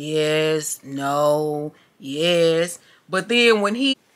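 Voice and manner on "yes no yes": low, flat, dead-level, lifeless monotone. Telling friends about the boy at their table; imitating a flat delivery. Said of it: "he all flat and stuff".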